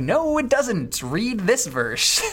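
high, slow, exasperated retort.

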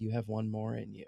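hushed whisper. Describing a favorite scene from an episode, whispering. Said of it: "and then just whispers".

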